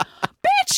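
very high, exasperated screeching. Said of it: "And I'm like".

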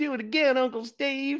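put-on very high, squeaky little kid voice with Southern accent. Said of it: "I didn't have a Southern accent like that".

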